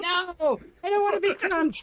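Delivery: screaming popcorn voice. Voicing a sentient popcorn screaming as it is eaten: screaming popcorn voice. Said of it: "It screams as".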